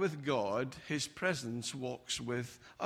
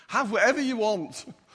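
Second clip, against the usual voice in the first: feigned gritted-teeth speech, higher pitch; 7 semitones higher, 8 dB louder than usual. Acting out a parent at a birthday meal, mock speaking through gritted teeth. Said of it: "You say it through gritted teeth sometimes".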